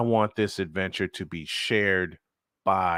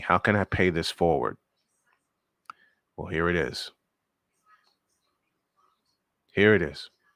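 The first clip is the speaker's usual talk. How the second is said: voice holding back tears. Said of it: "I'm trying very hard not to cry".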